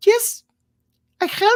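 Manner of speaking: put-on very high little old-lady character voice. An elderly lady opens her door to visitors, elderly lady voice. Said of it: "this uh, little elderly Tynum uh, lady".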